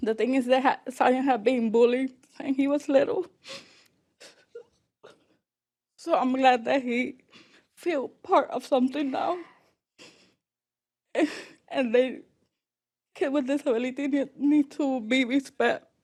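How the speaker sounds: close to crying. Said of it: "Sorry, I'm a crybaby".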